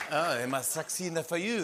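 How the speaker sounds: put-on French accent. Host joking after a news item about Biden, in a put-on French accent. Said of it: "[ French accent ]".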